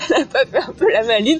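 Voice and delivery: laughing, half-teasing, mock-suspicious tone.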